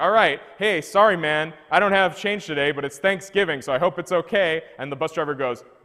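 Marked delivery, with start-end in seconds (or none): 0.0-4.6 easygoing, breezy, carefree no-worries tone. Retelling boarding a bus on Thanksgiving without change: acting out carefree past self. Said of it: "I'm just like carefree".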